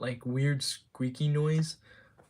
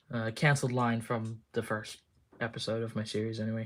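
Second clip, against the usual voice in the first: usual speaking voice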